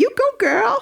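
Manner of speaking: bad, very high, shrill, screechy American accent. Showing how a phrase is best said, the speaker uses a terrible screechy American accent. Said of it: "best said in a really terrible screechy American accent".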